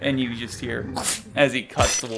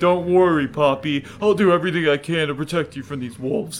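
frightened character voice, higher and louder; 4 semitones higher, 4 dB louder than usual. Narrating Darwin being ripped by wolves while reassuring Poppy: fearful Darwin voice. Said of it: "some real fear in his voice".

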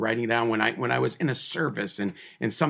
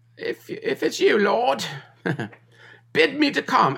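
very high, loud, swooping fake English accent; 13 semitones higher, 5 dB louder than usual. Retelling Peter calling out to Jesus in the storm, in a put-on English accent. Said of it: "I usually like to say that with a more of an English accent".

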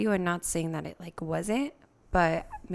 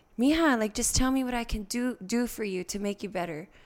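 mock yelling, tearful and frustrated; 4 semitones higher than usual. Retelling what the speaker's dad said to them: imitating tearful frustrated yelling. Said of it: "yelling at me out of frustration with tears".

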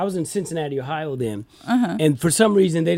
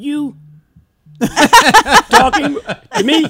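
high, booming, loud, slow dubbed-movie style voice; 11 semitones higher, 10 dB louder than usual. Retelling facing a school bully, imitating Bruce Lee dubbed voice. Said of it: "Bruce Lee took me over".

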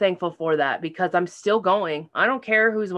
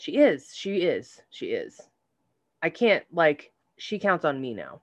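choked-up voice catching, holding back tears; 3 semitones lower, 3 dB quieter than usual. Talking about the woman who raised them, now in a nursing home, choking back tears. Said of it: "i'm choking back those tears".

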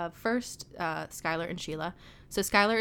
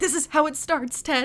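mock sobbing, high, loud bawling through the words; 9 semitones higher, 8 dB louder than usual. Speaker retells a scene of two drunk friends plotting, acting out Barney bawling. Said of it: "Barney immediately just starts bawling".

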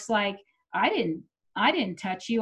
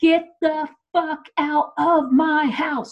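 mock screaming, loud, high, drawn-out, each word spaced out; 6 semitones higher, 5 dB louder than usual. Speaker retelling a fight after he broke things, retelling screaming at him. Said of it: "I was screaming at him".

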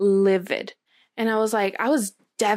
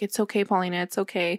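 choked-up voice, quieter; 4 dB quieter than usual. Retelling his reply on the phone: imitating someone choking up. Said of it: "I just hear him choke up".

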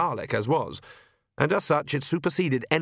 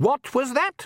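curt, snappish, very high-pitched snap; 12 semitones higher than usual. Reading a story aloud, a woman's voice reacts to Igor's muttered remark, snapping sharply. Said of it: "a female voice snapped".

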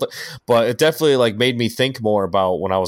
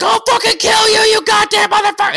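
mock, very high, shrill, loud screaming rage; 5 dB louder than usual. Act out the side of Aaron that you hate, imitating Aaron screaming. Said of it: "where he's just screaming".

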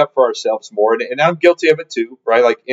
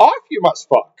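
put-on high, pitched-up voice of wise old little creature; 7 semitones higher than usual. Suggesting a way to tell people to fuck off, Yoda voice. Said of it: "if you say it in Yoda voice".

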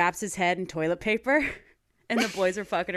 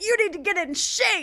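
acted, very high-pitched shouting; 12 semitones higher than usual. Recalling an X Factor video diary, the speaker acts out Louis: imitating Louis yelling. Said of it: "and was just yelling at them".

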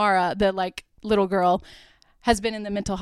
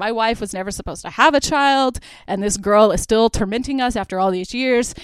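plain

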